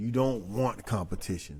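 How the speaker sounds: ordinary delivery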